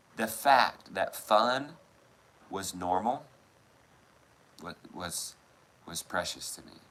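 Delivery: slow voice tearing up mid-sentence. Describing a dad fooling around with his kids: tearing up while talking. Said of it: "I'm tearing up".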